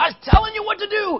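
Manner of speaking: high, loud, angry yell. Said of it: "He's yelling at me".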